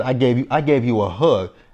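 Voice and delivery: plain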